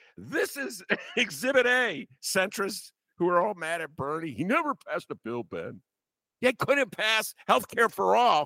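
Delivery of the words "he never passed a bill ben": scornful, derisive voice. Mocking centrists who are mad at Bernie, mocking centrist impression. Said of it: "That's my imitation of a centrist".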